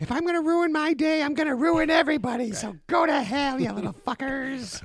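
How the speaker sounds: fake female voice, very high pitched. Describing a vegan bride who makes everything vegan, voicing her in a put-on female voice. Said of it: "that's my female voice for everybody".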